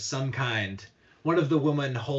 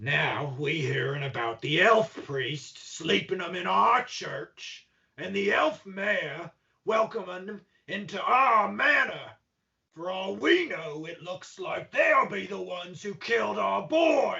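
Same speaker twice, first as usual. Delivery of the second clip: put-on high, drunkenly slurred, angry and accusing voice; 6 semitones higher than usual. The man keeps responding to the questioner: slurring, angry drunk. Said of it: "The man responds, quite slurringly and angrily. / The man responds, / I would have hoped that a member of the town guard would have known better than that. / quite slurringly and angrily. / quite slur".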